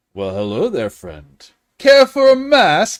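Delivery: hammy, over-the-top showman voice, very loud, swooping. A storyteller voices a gnome the listeners approach: over-the-top gnome. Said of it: "And he's very over the top".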